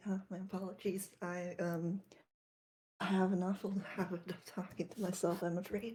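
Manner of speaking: faintly apologetic, sheepish, embarrassed tone. Game narrator voices a character caught talking to himself, embarrassed. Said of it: "Says in embarrassment".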